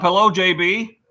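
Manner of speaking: loud, high yelling. Spotting someone in the shop, the speaker calls out a hello, yelling. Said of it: "I don't know why I'm yelling".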